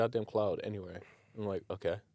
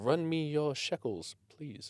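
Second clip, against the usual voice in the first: overly polite, courteous tone, pitched up; 7 semitones higher than usual. Mocking how British robbers ask for things: imitating a polite robber. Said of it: "you're being so polite".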